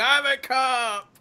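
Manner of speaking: screaming, yelling. Voicing a player character being led off into the night: screaming. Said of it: "you're screaming".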